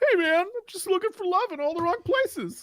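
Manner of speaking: put-on gamer dude voice, very high pitch. Showing off a new character just created: gamer guy character voice. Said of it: "It's that gamer guy".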